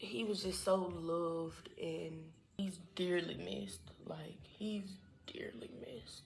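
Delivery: slow, halting, fighting back tears. Talking about someone who is dearly missed, trying not to cry. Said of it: "I'm trying not to cry".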